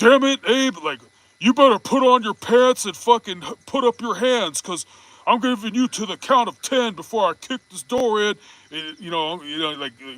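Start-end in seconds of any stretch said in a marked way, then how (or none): 0.0-8.4 put-on Texan dad voice, higher and louder. Acting out an angry dad at the bedroom door: Hank Hill voice. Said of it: "You bust a Hank Hill".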